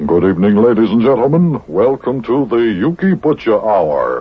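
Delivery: broadcast announcer voice. Opening the program by reading the script, in a radio announcer voice. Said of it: "I'll just use my radio announcer's voice".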